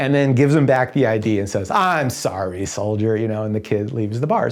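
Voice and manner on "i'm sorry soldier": good-natured, playful teasing tone. Retelling a bar scene where Sam busts a kid's fake ID: imitating Sam teasing playfully. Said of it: "Sam is busting him in this really playful way".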